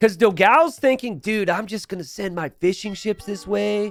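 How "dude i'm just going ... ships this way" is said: laid-back surfer-dude voice. Voicing another person's thinking during a game, in a surfer voice. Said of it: "I don't know why I'm talking like a surfer".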